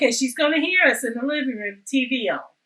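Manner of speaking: normal talking voice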